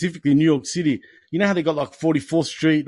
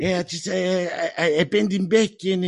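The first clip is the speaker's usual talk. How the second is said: put-on strong Canadian accent, higher; 3 semitones higher than usual. Showing the other speaker how to do Stu Hart: Stu Hart voice. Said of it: "But can you fucking do Stu Hart?".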